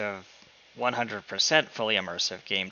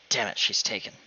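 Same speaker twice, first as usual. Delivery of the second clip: muttered under the breath. In an acted-out story, a man reacts as a woman calls a lady mom, muttered under his breath. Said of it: "He says under his breath".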